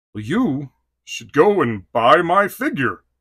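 slow, drawn-out heroic cartoon voice with swooping pitch. Talking about a figure he loves, the speaker answers as the toy in a He-Man voice. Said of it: "Because that's how he sounds".

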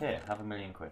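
ordinary talk, nothing marked

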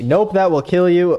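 fed-up, exasperated voice. Repeating a line from a clip mockingly: imitating an exasperated mother. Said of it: "Exasperated mother joke".

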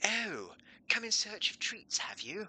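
posh accent, pitched very high. Trying out a voice for the housemate Willow, in a posh Willow voice. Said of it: "I feel like it's more of a posh accent".

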